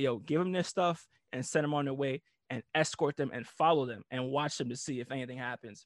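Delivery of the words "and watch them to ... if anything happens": ordinary talk, nothing marked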